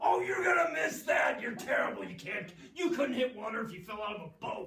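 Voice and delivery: very loud, high-pitched jeering, taunting tone. Retelling a man standing three feet from a fielder, imitating a heckler's taunts. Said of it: "he'd stand there three feet from him and go".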